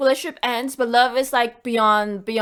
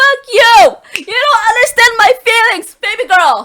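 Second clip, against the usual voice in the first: angry, fed-up yelled outburst; 10 semitones higher, 10 dB louder than usual. Acting out how the coworker reacts to not being understood: imitating a coworker yelling. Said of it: "That's why she's yelling at you right now".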